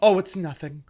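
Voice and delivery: plain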